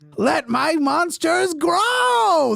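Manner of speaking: exaggerated, very high, creaky voice, "grow" stretched out. Joking about being married to Kimberly Guilfoyle, quoting her: Kimberly Guilfoyle impression. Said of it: "That's my impression of Kimberly Guilfoyle".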